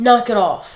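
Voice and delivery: mock Italian woman's voice with scolding tone. Retelling how her italian mom scolded her as a kid: imitating her italian mom scolding. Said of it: "And she was like".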